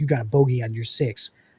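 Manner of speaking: low, stagey, rehearsed, scripted-sounding delivery. Imitating players on stage in a staged game trailer: imitating staged trailer players. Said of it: "and then they'd be like".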